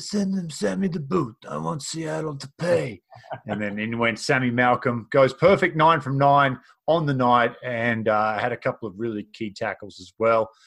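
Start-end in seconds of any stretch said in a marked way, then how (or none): 0.0-3.0 raspy, pitched-up put-on mafia boss voice. Host retells how a man reacted to signing the player of the week, in Corleone voice. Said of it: "in his best Corleone voice".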